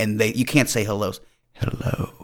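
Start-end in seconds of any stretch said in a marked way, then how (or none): 1.5-2.2 sultry, breathy, seductive whisper. Retelling how contestants greet each other: imitating a sexy hello. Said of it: "tries to say hello sexy".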